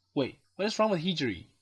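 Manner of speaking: normal talking voice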